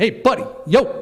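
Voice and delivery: put-on casual New York street accent. Retelling what a man on the stairs said: imitating a New York accent. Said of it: "You know how they talk back there in New York".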